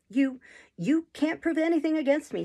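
high voice, stammering and stumbling over words. A man answers an old gentleman who claims to know his secrets; stammering. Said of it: "stammered Monks".

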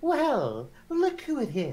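small, little female voice. Narrating a forest encounter, the speaker voices a performer with a lute: small voice. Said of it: "The small voice belongs to".

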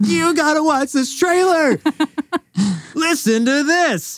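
acted-out giggly, very high, excited gush. Retelling how Robin urged the speaker to watch a trailer, imitating Robin's excitement. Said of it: "Robin was so excited".

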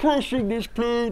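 villainous puppet-like character voice. Asked what Bane sounds like, the speaker demonstrates with a Bane impression. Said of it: "you sound like a Muppet that got stuck in a wall".

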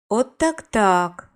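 whistling in surprise, astonished. A man opening a newspaper in the metro reacts with a surprised whistle. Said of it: "здивовано свиснув він".

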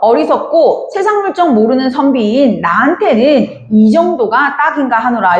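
usual speaking voice

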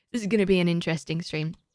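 fast rattled-off delivery.

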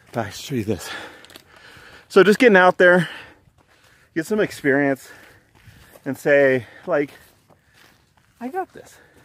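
out of breath. Heading up toward a meadow with a companion, giving advice: out of breath. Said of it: "I'm a little out of breath".

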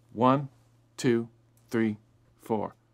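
slow, unhurried, evenly paced delivery. Teaching note values, counting off a whole note slowly. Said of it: "I'll count it off slowly".

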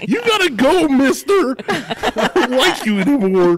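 very high, loud, cracking, drawn-out cartoon voice. Picturing a man from the episode as Shaggy, in Shaggy voice. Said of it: "I just pictured like Shaggy from Scooby Doo".

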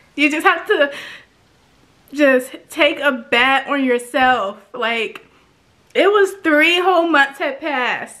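teary, choked-up voice while talking. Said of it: "I didn't know that I was gonna cry".

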